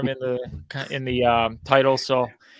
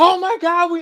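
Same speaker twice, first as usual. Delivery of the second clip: put-on freak-out, much higher pitch; 5 dB louder than usual. Describing a man suddenly going crazy in the office, imitating someone freaking out. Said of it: "What is he freaking out at?".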